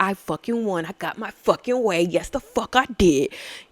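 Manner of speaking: slow, pumped-up, triumphant delivery. Retelling talking to herself in the work bathroom mirror, retelling hyping herself up. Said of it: "I had to hype myself up".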